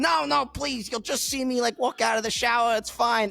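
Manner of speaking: pleading, begging, wheedling voice. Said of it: "And he's just like".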